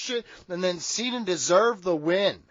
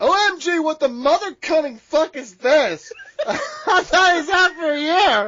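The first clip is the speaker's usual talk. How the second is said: put-on sassy, flamboyant male voice, loud and high; 7 semitones higher, 5 dB louder than usual.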